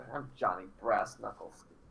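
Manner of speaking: low, muttered under breath, to oneself. Following the other character in the game: muttering under his breath. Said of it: "I kind of mutter under my breath".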